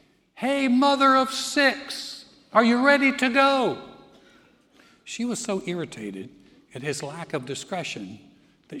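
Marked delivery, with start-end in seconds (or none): 0.4-3.8 loud, high, drawn-out shout. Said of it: "He yells out in this party".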